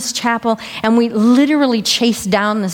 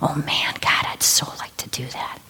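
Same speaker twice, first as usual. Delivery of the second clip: pathetic, tiny, hushed little whisper; 7 semitones lower, 8 dB quieter than usual. Recalling a wish to walk St. Ignatius's path, retelling a tiny little whisper. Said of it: "I had whispered in this tiny little whisper".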